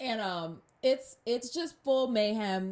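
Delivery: plain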